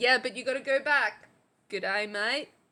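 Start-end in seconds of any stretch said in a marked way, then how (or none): 1.7-2.5 Australian accent, lower pitch. Showing how to talk with an Australian accent: Australian accent. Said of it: "speaking English with an Aussie accent".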